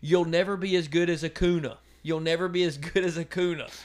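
acted-out, taunting, heckling yell. Retelling how a fan yelled at a player: imitating a fan yelling. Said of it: "he starts yelling at him".

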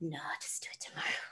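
fast hushed whisper. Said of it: "I'd be like".

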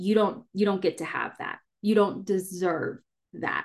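acted plain, matter-of-fact, level voice. Voicing one of the deepest shadows as an inner voice: imitating a matter-of-fact inner voice. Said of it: "it's a matter of fact voice".

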